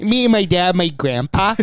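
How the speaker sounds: over-the-top put-on voice, high and drawn-out. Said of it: "It was so exaggerated the way you said it".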